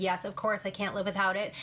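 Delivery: ordinary delivery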